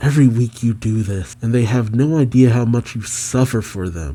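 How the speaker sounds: ordinary talk, nothing marked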